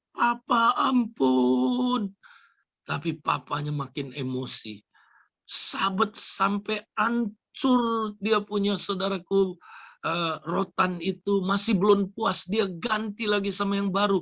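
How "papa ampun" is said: put-on high-pitched, loud pleading scream, like a child. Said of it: "Dia berteriak-teriak".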